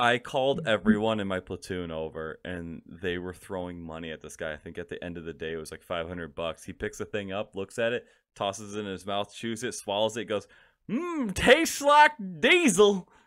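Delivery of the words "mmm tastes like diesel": very high, very loud, thick Southern drawl. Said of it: "He had a real thick Southern accent".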